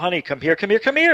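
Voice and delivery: calling out loudly, repeated. Retelling calling a wife over to see the lights: retelling own yell to wife. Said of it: "I yelled at my wife".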